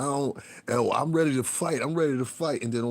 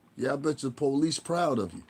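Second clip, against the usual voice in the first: plain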